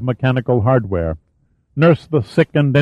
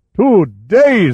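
put-on booming, high exclamation in a Scots accent; 6 semitones higher, 3 dB louder than usual. A narrator voices Fox, a former sea captain turned farmer, exclaiming in a booming Scots accent. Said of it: "He exclaimed in a booming Scots accent".

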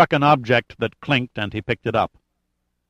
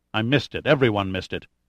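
ordinary delivery

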